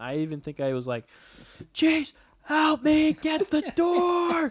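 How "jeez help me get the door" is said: put-on scream, higher pitched and louder. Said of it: "I was screaming for help".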